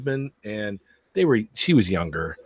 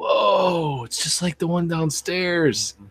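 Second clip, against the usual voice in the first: put-on high, slow, wide-eyed amazed kid voice. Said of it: "he's like".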